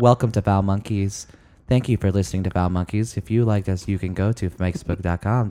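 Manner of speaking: flat, level, unvaried monotone announcer read. Mimicking how someone read the show outros, imitating someone's monotone. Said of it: "you also do kind of monotone".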